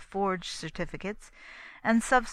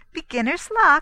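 very loud, very high, shrill, strained forced laugh; 9 semitones higher, 11 dB louder than usual. Narrator voicing Bella remarking on Constance's steady winning, with a forced laugh. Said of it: "with a forced laugh".

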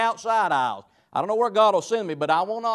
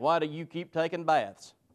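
put-on deadpan delivery, quieter; 3 semitones lower, 6 dB quieter than usual. Retelling a reply to a lady's question about revivals: imitating a deadpan reply.

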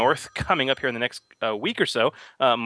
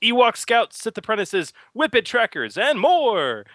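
put-on radio announcer voice, very high; 10 semitones higher, 3 dB louder than usual. Listing new game stat blocks for listeners in a radio announcer voice. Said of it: "complete with the radio announcer voice".

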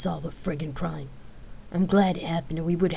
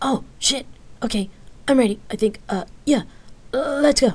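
jittery, flustered, nervous voice, pitched up; 7 semitones higher, 4 dB louder than usual. He realizes it's time and drops his shopping bag, nervous. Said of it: "He nervously replied".

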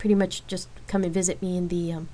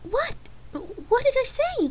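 nervous, very high, slow, drawn-out delivery. Lark answers Rain's disgusted accusation, asking nervously. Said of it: "Lark asked nervously".

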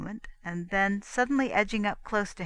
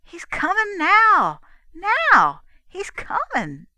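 excited, swooping, very loud, very high call; 11 semitones higher, 9 dB louder than usual. A girl tells her mistress that he is arriving, excited. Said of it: "girl excitedly repeating as he arrives".

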